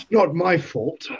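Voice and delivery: put-on, badly done Scottish accent. Speaking in character during a tabletop game, bad Sean Connery impression. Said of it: "that was a bad version".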